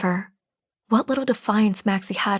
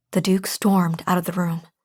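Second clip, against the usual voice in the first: ordinary delivery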